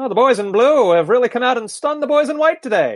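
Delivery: put-on old-timey announcer voice. Podcast co-hosts recapping the 1950 World Cup US-England match, old-timey announcer voice. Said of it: "How does your old-timey voice, announcer voice, sound?".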